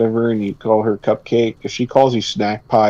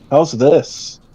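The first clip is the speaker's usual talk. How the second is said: sly, smug, self-assured, knowing tone; 4 semitones higher than usual. Showing how people drop in a line they already know works, in a knowing smug tone. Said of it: "you know what you're dropping in there".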